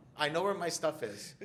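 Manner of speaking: high, loud, hurried apologetic tone. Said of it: "I'm like".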